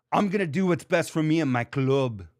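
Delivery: put-on actor's American accent slipping on the word "club". Imitating an actor playing a biker whose American accent slips on "club". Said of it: "listen to Charlie Hunnam".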